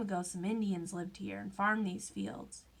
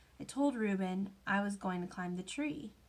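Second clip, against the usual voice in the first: plain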